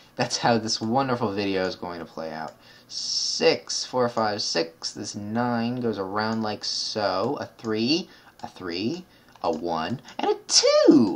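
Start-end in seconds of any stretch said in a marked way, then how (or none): 7.4-11.2 words spaced out in a swooping, lilting tune. Setting out numbers for a video, counting in a Tootsie Roll Pop owl voice. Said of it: "I sound like the owl that's eating a lollipop".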